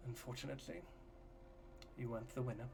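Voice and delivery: very soft, private, very quiet hush. A character steps up to Viola, away from the others; hushed. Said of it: "this is all hushed".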